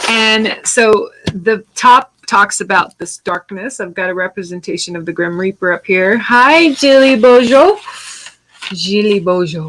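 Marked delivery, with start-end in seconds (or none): 8.7-9.7 put-on French accent. Greeting someone by name while painting: French accent. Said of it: "I wanna say that with a French accent".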